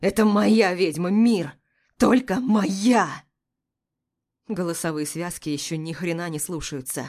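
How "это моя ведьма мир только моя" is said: growling, snarling like a wounded beast. A narrator reads the first-person hero's words in a fight: growling like a wounded beast. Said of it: "рычу раненым зверем".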